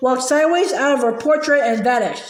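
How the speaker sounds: ordinary delivery, nothing marked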